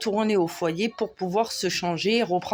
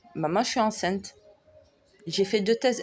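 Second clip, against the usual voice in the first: ordinary talk, nothing marked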